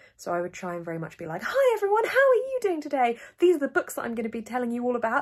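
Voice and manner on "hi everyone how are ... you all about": voice pushed way up, very loud host voice. Recalling early YouTube videos, the speaker shows the voice brought up. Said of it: "try and bring my voice up".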